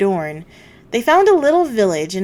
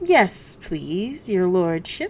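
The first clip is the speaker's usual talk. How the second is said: slow, fawning, coaxing, wheedling servility; 2 semitones lower, 6 dB quieter than usual. Reading a story aloud, the slave dealer bowing to a lord: wheedling voice. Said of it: "in a wheedling kind of voice".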